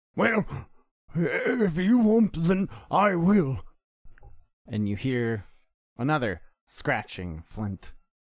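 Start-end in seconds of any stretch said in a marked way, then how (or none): 0.2-3.7 put-on very high, loud, cranky old grandfather voice. The old man speaks in the dark before striking a light himself, old man character voice. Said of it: "I am your grandfather. / A small candle comes up as the old man investigates the body. / A small candle comes up as the old man investigates the body".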